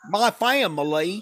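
put-on American Southern accent. Imitating a coach's new Southern accent: imitating Brian Kelly's Southern accent. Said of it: "He's got a really good accent now".

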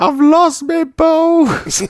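very high, stretched-out, drawn-out holler. Coming up out of deep water, the speaker retells what he shouted, retelling a shout. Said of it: "I just shouted".

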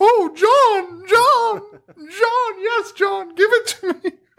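very high, stretched, drawn-out woman's scream. Mocking a movie scene by imitating a woman screaming. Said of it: "you don't have to have the woman just screaming".

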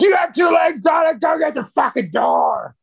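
very high, piercing, shrill holler. Picturing the other speaker's home, the speaker imitates someone yelling at a daughter to get the door. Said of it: "I can hear you yelling at the door".

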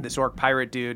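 ordinary delivery

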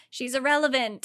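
ordinary delivery

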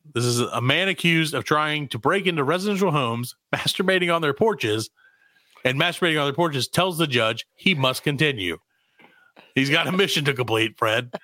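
plain

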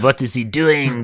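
put-on French accent, slow. Acting out a spy peering through a newspaper: French accent. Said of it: "That is my French accent".

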